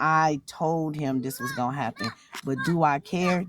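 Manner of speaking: slow, low, unbothered don't-care tone. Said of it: "Do you hear the tone in my voice?".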